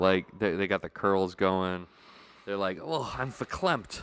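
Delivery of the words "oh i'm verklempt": motherly character voice, pitched higher and slower.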